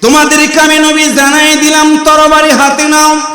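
loud, high-pitched rousing rallying call.

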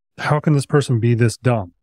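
plain

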